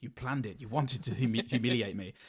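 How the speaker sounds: muttering under the breath. Retelling a man's line to a dog: imitating muttering under breath. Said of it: "under his breath going".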